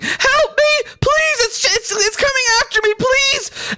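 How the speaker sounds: put-on very high, tearful, panicked little-girl crying voice. Voicing a small girl running toward a character: little girl yelling for help. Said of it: "yelling and saying".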